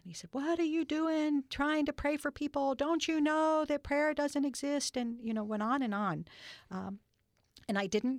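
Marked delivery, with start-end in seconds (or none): 0.3-4.9 loud, raised, angry yelling. Recalling a gentleman yelling at them for praying, imitating an angry yell. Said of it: "he was very angry and he was yelling at me".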